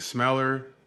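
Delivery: ordinary delivery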